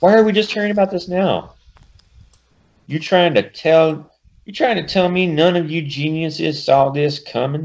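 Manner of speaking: put-on Southern accent. Speaker voicing Rogue's line in her southern accent. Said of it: "says Rogue in her southern thingamahoosie".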